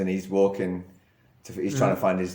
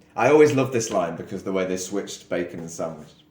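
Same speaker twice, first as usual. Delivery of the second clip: ordinary delivery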